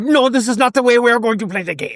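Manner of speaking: mock irate voice. Imagining the postmaster of the game getting angry, as a mock-angry postmaster. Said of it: "Could you imagine him just like getting angry?".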